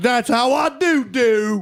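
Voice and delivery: very slow, drawn-out, put-on Southern drawl. Speaker shows how a Southern person sounds in their head, put-on Southern accent. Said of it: "That's what a Southern person sounds like to me".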